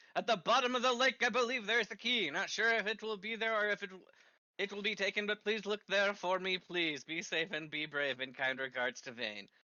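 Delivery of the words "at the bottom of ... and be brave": frustrated, annoyed put-on reading aloud, pitched up. Asked to read a note aloud, reading it as his character would: frustrated, annoyed. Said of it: "I read it as my character would read it. He's a little frustrated and annoyed".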